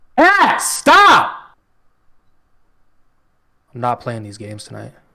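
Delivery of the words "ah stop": shrill, very loud, high-pitched yell. Reacting to friends' football teasing with a sudden outburst: yelling. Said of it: "Sorry for yelling and no warning".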